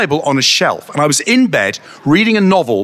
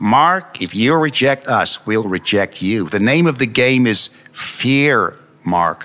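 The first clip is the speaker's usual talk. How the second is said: low, ugly, unpleasant put-on voice; 5 semitones lower than usual. Recalling a voice heard while falling asleep, unpleasant put-on voice. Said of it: "I heard a very unpleasant voice, and I'll do the voice for you".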